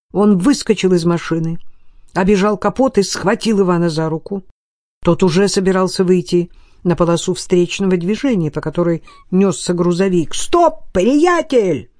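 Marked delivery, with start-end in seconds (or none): 10.3-11.8 high, hard, loud shouted yell. Narrator reads Stefan grabbing Ivan before he steps into traffic: shouted out. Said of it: "выкрикнул Стефан".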